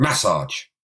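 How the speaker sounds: massage stressed on first syllable, MAS-sage. Showing the other speaker how to say the word: stress on the first A of MASSAGE. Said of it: "The emphasis should be on the first A".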